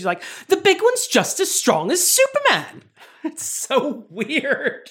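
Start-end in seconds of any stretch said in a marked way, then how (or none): 0.5-2.8 put-on, high, swooping mid-Atlantic accent. Recapping a Superman movie, quoting Lois's work frenemy in a mid-Atlantic accent. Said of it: "I think this is a mid-Atlantic accent".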